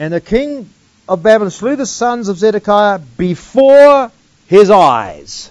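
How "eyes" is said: weight landing hard on 'eyes'. Speaker reading a verse aloud to listeners, with stress on 'eyes'. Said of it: "notice the emphasis on the word eyes".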